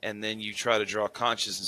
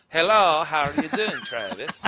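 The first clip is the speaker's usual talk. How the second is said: put-on Swedish accent, pitched up high; 7 semitones higher, 4 dB louder than usual. Greeting a caller, trying a put-on Swedish accent. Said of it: "That's Borat".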